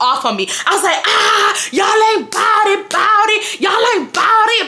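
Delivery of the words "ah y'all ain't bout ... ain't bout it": put-on very high, swooping, drawn-out yelling. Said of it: "I'm screaming".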